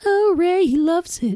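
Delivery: very high, taunting voice. Retelling a TV scene where a man mocks his wife, high mocking imitation of Deborah. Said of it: "He mocks her by going".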